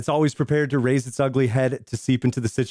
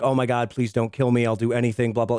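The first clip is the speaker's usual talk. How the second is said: mock begging, acted pleading. Speaker retelling a captured man's plea in a movie scene; mock begging. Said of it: "he is begging".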